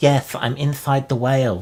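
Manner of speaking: put-on high, small little girl's voice. Telling a game story, voicing a girl answering from inside the whale in a little girl's voice. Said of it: "I hear a little girl's voice inside saying".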